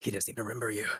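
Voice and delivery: hushed stage whisper. Half-whispering a line in character to a nearby player: half-whispering. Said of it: "you hear kinda me whispering".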